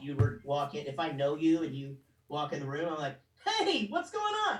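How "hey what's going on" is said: very high, pitched-up voice. Showing how he greets someone he knows: Chuck E. Cheese people voice. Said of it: "what my best friend calls my people voice".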